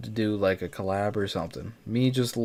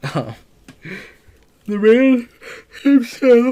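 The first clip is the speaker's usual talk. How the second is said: very high, loud, said through a yawn; 12 dB louder than usual. Video maker, up near three in the morning after working all day: yawning. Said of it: "Sorry, I'm yawning".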